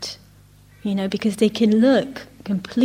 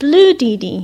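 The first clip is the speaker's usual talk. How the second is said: put-on loud little-kid shout; 3 semitones higher, 7 dB louder than usual. Retelling a little girl calling out bead colours: imitating a child shouting. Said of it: "she shouts out".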